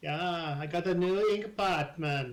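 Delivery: put-on Jamaican accent voice. Voicing a scribe character who sells inks and ink pots: Jamaican accent. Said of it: "Jamaican accent, it says".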